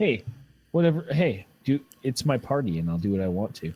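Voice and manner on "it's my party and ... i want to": very low, flat deadpan monotone drone. Answering a friend's story with a shrug: monotone delivery. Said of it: "doing it monotone like that".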